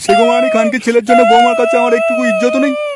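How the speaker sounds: high, loud, furious outburst.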